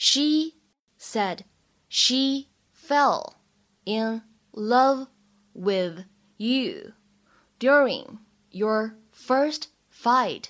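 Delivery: slow delivery broken into chunks with pauses.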